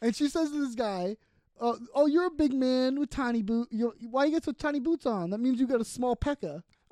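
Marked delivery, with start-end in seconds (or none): 1.9-6.6 mock sassy, teasing woman's voice. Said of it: "sassy and zingy to these guys".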